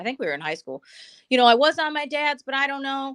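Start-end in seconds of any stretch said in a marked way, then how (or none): 1.3-3.2 mock tearful crying voice. Retelling a friend's words after a car accident: imitating a friend crying. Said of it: "she's, like, crying".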